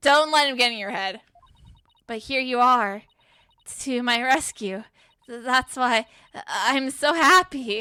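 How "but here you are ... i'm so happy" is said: slow, tearful speech, talking through crying. Voicing a rescued client who says she's so happy: crying while talking. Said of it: "It sounds like she's crying back there".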